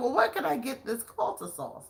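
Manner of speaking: put-on female British accent. Retelling what a lady at the park asked: imitating a British accent. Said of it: "and she was British".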